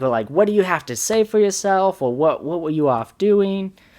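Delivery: acted angry scolding tone. Speaker reenacts confronting a girl after yelling at her, retelling an angry scolding. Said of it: "after I'm done yelling at her".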